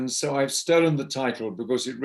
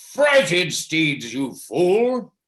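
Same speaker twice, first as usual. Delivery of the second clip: furious, very angry, loud, deliberate, drawn-out scolding; 5 semitones higher, 6 dB louder than usual. Telling a story, voicing what a voice said to a drowsy writer; acting out a very angry voice. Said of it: "a very angry voice said to him".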